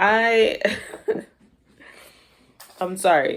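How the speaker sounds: words breaking up with laughter. Apologizing during a reading, laughing while talking. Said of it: "I'm only laughing because".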